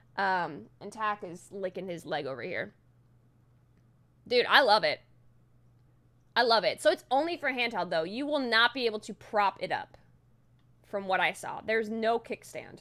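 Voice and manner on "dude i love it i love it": talking very loud, excited. Talking about a handheld device, talking really loud and excited. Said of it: "I'm talking really loud because I'm really excited right now".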